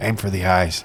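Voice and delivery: low, hushed, half-whispered sock-puppet voice. Telling a joke about a talking sock, speaker voices the sock half-whispering in your ear. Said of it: "it whispers in your ear".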